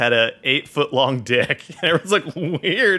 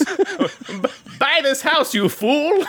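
very high, very slow, stretched-out delivery; 11 semitones higher than usual. Voicing a character who tells someone to buy the house: Skeletor voice. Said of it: "She talks like Skeletor".

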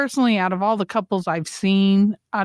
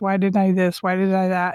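put-on crying voice. Retelling what they said alone after an argument: imitating own past crying. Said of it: "And I would be rocking, crying, going".

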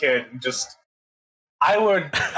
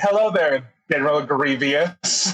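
plain

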